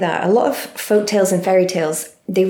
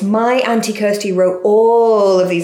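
booming, very loud voice, all drawn out; 4 dB louder than usual. Retelling what he said in the bookshop, in a really loud voice. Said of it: "he said in a really loud voice".

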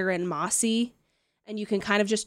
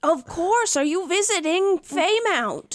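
put-on very high, loud little old gnome lady voice; 10 semitones higher, 5 dB louder than usual. Narrator voicing a gnome lady answering visitors in Common, little old gnome lady voice. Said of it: "They're little old ladies and common is not their first language".

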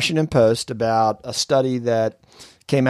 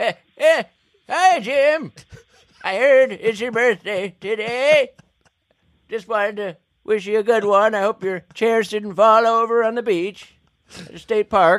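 put-on elderly old man voice; 10 semitones higher than usual. Leaving a birthday voicemail message, in a put-on old man voice. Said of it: "Do your old man voice".

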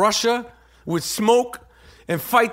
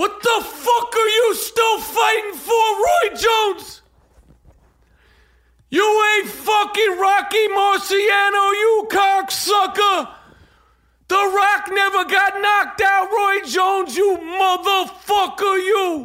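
very high-pitched rant full of cursing; 10 semitones higher than usual. Ranting at a fighter called Roy Jones: Aiello impression. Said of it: "That was my first Aiello".

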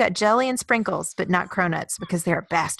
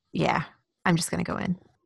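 put-on deadpan actor-style impression; 4 dB quieter than usual. Recapping a funny scene, quoting his line, imitating Bateman's deadpan. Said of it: "this little Bateman deadpan".

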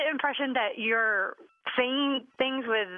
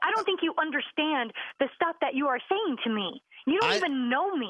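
very upset, defiant, pushing-back tone; 4 semitones higher than usual. Replying to someone who says they sound upset, very upset. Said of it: "I am very upset".

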